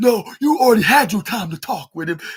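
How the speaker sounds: put-on, loud, snappy, curt delivery. Retelling a reply to a fan who tried to speak: imitating a snappy retort. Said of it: "saying it in a snappy voice".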